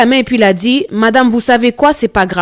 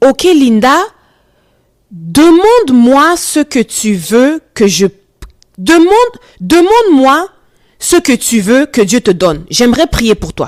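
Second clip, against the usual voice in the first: acted, dead-earnest, super serious, grave tone. Retelling what the homeless man said when offering to pray: imitating a very serious tone. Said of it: "avec un air super sérieux".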